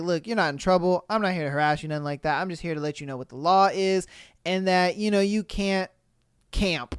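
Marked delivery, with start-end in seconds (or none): none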